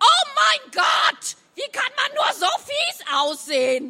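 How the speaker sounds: very high, shrill, swooping, screeching monster voice. Narrating a story as a monster suddenly appears, in a shrieking voice. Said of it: "eine kreischende Stimme".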